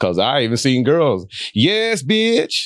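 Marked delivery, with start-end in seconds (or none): 1.5-2.7 impression of girls' voices, pitched higher. Imitating girls who talk to each other: impersonating girls talking to each other. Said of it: "That's a good impersonation".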